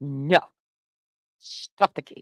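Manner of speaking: put-on fatherly dad voice. Retelling what a man said about the lawsuit, in his put-on dad voice. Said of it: "he had to use his dad voice".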